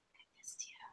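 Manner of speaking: very soft, close, breathy secretive whisper. Whispering close to a horse so Gale can't hear: whispering. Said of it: "And then I whisper, I whisper so".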